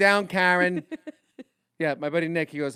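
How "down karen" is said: put-on Jersey accent, louder. Friends joking about Jersey accents quote a movie line, Goodfellas New Jersey accent. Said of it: "like it's like Goodfellas".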